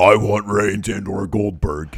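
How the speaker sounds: put-on slow, drawling Southern accent. Retelling a wrestler's backstage line: Braun Strowman southern accent. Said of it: "he has that southern accent going".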